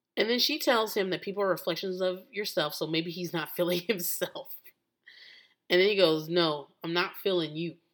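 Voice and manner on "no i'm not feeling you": forceful, emphatic delivery, slower. Recounting a scene where he answers her back; retelling a forceful reply. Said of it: "the way he said it was like with a little bit of force".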